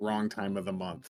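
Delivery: close, hushed half-whisper, barely audible. Leaning into another character's ear, half-whispering. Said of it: "I'm gonna whisper".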